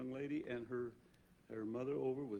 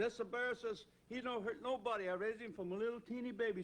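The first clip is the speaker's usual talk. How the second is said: put-on halfhearted, weak Italian accent, pitched very high; 10 semitones higher than usual. Retelling what the Italian bear owner said, in a weak Italian accent. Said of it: "I can't do much of an Italian dialect, but he says".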